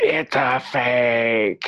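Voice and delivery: very slow, dramatic line reading. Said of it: "the memes with".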